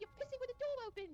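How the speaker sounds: loud yell in a put-on British accent. Retelling a roommate yelling at someone peeing with the door open: imitating Kitty's British yell. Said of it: "She's British".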